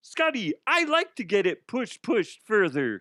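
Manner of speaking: bad, lousy frog-puppet voice. Joking about getting a cease and desist from the Muppets, the speaker does a bad Kermit impression. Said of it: "I just don't think that sounds like Kermit".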